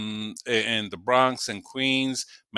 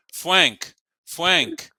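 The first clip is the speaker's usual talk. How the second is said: put-on sing-song German accent, r leaning toward w; 7 semitones higher than usual. Describing how Germans speak English, the speaker says his own name in a German accent. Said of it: "you ever heard a German speak English".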